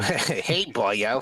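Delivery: skeleton character voice. Asked on the spot to say boyo, in a skeleton guy voice. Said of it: "can you say Boyo or something?".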